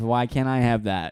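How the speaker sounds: plain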